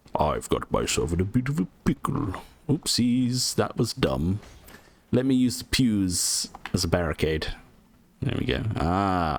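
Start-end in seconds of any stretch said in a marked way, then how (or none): 0.2-2.4 sing-song knight voice, pitch swooping and swinging around. Showing how the Iron Knight talks: Siegward voice. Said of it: "he talks like this".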